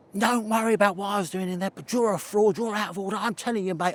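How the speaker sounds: furious, high, angry yelling. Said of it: "could you stop shouting?".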